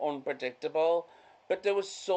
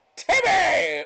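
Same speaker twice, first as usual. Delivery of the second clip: put-on very high, loud shout in cartoon-boy voice; 8 dB louder than usual. Acting out a silly bit about a penguin and a slide: Timmy from South Park shout. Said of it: "He's like".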